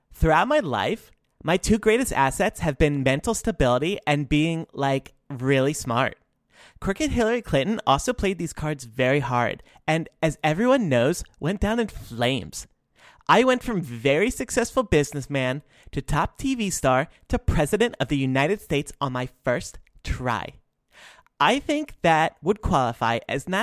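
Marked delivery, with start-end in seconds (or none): 0.1-20.5 put-on valley girl voice. Reading the president's tweets aloud, in a Valley Girl voice. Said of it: "read these in Valley Girl voices".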